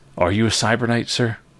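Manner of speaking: frail woman's voice. Voicing a frail-looking peasant woman who answers the door: voicing a frail peasant woman. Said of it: "a rather frail-looking woman".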